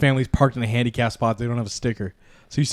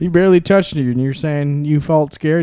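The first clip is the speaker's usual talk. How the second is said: ordinary talk, nothing marked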